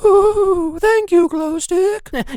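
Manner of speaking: very high, slow, drawn-out ghost voice. The ghost living inside the speaker's brain answers Glowstick, Ghosty Posty ghost voice. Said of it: "This could only mean that they're now finally going to cut off my head and release the ghost that lives inside my brain. How are you doing, [name]?".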